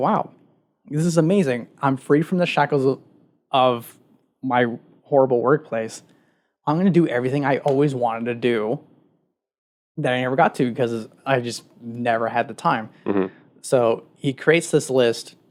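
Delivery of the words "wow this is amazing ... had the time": ordinary talk, nothing marked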